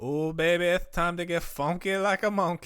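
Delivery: wrestling promo voice. The speaker attempts a Dusty Rhodes impression. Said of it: "as genuine Dusty Rhodes as it gets".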